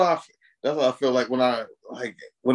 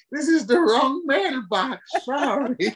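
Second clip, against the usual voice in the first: imitated elderly voice, higher; 13 semitones higher than usual. Describing old people in slasher films, impersonating old people. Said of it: "I liked your impersonation of the old people".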